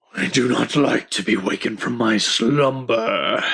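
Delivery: slow, drowsy, just-woken dragon voice. Narrating a story aloud, voicing the dragon: sleepy dragon voice. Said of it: "the dragon sleepily says".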